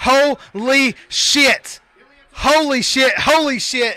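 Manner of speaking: stunned, drawn-out screaming. Reacting live as a fighter becomes the new champion, screaming. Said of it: "and I'm screaming".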